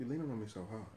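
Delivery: half-whisper, barely audible stage whisper. Complaining to the other speaker about leaning on you: half-whispering. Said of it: "Why are you whispering?".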